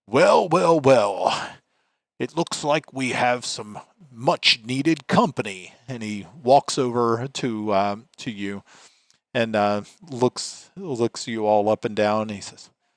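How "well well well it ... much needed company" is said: broad, big, resonant, resounding commander voice. Narrating a game, an armored figure greets the arriving party; booming voice. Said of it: "in a booming voice".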